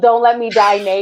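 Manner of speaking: mock-pleading, acted begging tone. Recounting a bad mushroom trip, the speaker acts out begging the others: retelling own begging. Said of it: "begging them".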